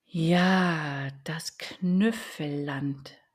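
quiet muttered murmur, "Ja" drawn out. After a long sigh, the owl repeats the duck's words quietly to herself. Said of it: "wiederholte sie leise vor sich hin".

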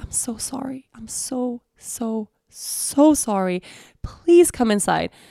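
very slow, tearful, on the verge of crying. Retelling what a woman said as she opened her door, imitating someone almost crying. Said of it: "she almost starts crying".

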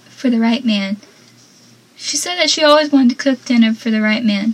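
plain

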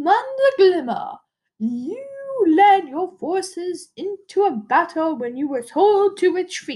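put-on queenly mother voice. Acting out a scene where the mother addresses Commander Glimmer, doing her mom's voice. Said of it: "I'm going to do the voice anyway".

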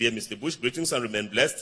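ordinary delivery

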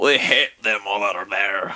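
put-on Scottish accent in a low voice. Replying to another speaker in a group conversation, in a Scottish accent. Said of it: "That was a Scottish accent".

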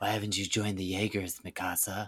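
acted-out, leaning-in whisper. Recounting an anime scene, leaning in: retelling Jean leaning in whispering. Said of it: "leaning in and like whispering".

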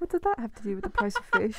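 very high, swooping, put-on British accent. Repeating the other speaker's English mom's saying, the speaker puts on a British accent. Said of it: "my British accent is superb".

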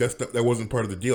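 usual speaking voice

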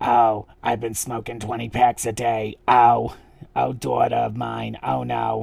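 gravelly cartoon character voice. Retelling a contestant's impersonation of Roz from Monsters, Inc. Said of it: "Saint doing basically, like I said, Roz from Monsters, Inc".

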